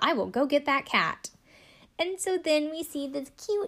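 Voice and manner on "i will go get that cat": very enthusiastic, keen and eager. Retelling what a therapist said about fetching a cat: imitating an enthusiastic reply. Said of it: "very enthusiastically says".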